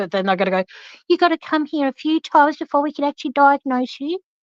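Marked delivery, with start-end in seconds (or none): 1.1-4.2 put-on high-pitched elderly woman's voice. Acting out what they would say before diagnosing you, in an old lady voice. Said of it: "I don't know why I just did that voice. It sounded like an old lady".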